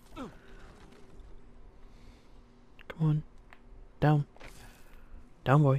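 hushed whisper. Playing a stealth game, the player whispers out of habit. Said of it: "I know I'm whispering for some reason".

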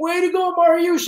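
put-on, very high-pitched shrieking, screaming cheer. Retelling the coach cheering after the race: imitating Terry Stoddard yelling. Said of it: "is yelling in a scream".

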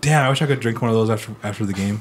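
ordinary talk, nothing marked

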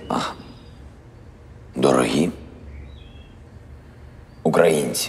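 breathy, hushed, drawn-out, over-theatrical pauses. Rehearsing an address to Ukrainians while being directed, with overly theatrical pauses. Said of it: "эти мхатовские паузы ни к чему".

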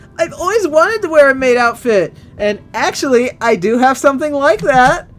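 put-on, very high girly voice. Streamer reading a story aloud voices the girls' comments; girly voice. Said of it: "That's my girl voice".

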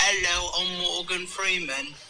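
slow, put-on British accent. Showing a special talent: Morgan Freeman impression in British accent. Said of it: "a Morgan Freeman impression, but in British".

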